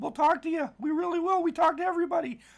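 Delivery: squeaked out way up high. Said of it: "There's my Mickey Mouse voice again".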